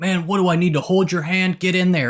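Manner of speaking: mild, half-voiced hollering. Retelling a movie scene where the mayor yells at an officer: imitating someone yelling. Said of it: "the mayor just keeps yelling at him".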